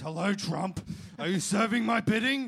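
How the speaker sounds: put-on voice, bellowed very loud and pitched high. Joking that Trump takes orders from a voice in the mirror: Satan voice. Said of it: "that's the voice of Satan".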